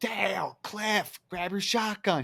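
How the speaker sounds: mock very slow, high, drawn-out holler. Speaker retells a neighbor shouting during a night walk, retelling a shout. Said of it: "He's shouting it".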